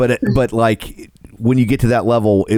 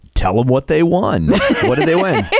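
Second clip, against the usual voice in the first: put-on, pitched-up game-show announcer delivery; 5 semitones higher than usual. Prompting another speaker to say what the winner won, announcer voice. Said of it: "put on my announcer voice".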